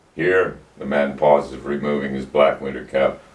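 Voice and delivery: ordinary delivery, nothing marked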